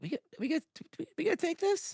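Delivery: very high, halting, stammering, leaned-in whisper. Leaning in to a party member during a confrontation: whispering in character. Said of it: "lean into Li-, Lizette a little bit and whisper".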